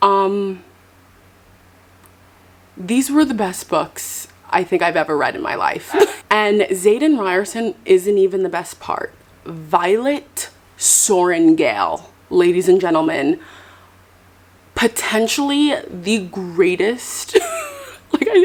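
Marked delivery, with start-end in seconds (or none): 9.5-17.4 slow, drawn-out, dramatic grand announcer tone. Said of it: "I sound so dramatic".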